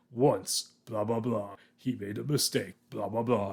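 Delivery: grand, epic movie-trailer narrator voiceover voice. Describing an old film teaser's narration, imitating epic trailer voiceover. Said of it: "the epic voice guy going".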